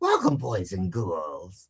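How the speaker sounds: swooping put-on character voice. Recalling a character voice once used in uncomfortable situations: put-on character voice. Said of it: "I used to do his voice".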